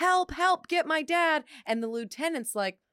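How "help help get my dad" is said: slow, stretched-out, high, loud drawn-out scream. Retelling a scene where Nancy screams through the window; retelling Nancy's scream. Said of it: "you have Nancy screaming through the window".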